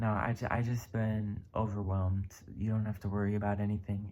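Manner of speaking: ordinary talk, nothing marked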